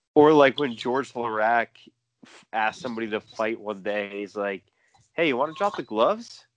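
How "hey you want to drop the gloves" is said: relaxed, calm, casual, matter-of-fact delivery. Retelling a hockey fighter asking someone to fight: calm Georges Laraque impression. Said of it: "so calm, so calmly".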